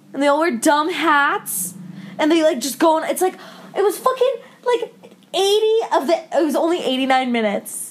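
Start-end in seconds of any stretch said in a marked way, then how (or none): none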